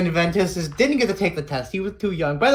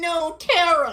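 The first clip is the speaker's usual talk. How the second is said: put-on whiny voice, higher; 10 semitones higher than usual. Retelling a game scene, voicing Ventus as he calls after Terra: whiny Ventus voice. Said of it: "I make Ven sound whiny".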